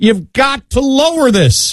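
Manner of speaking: high-pitched, slow, pleading cry.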